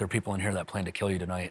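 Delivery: acted-out muttering under the breath. Retelling how a man came up and warned them, retelling an under-breath warning. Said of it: "kind of like under his breath is like".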